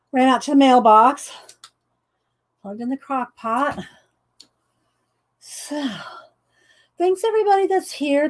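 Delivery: catching breath between phrases, breathless and winded. Back from running to the mailbox, thanking everybody who is there: out of breath. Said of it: "I catch my breath".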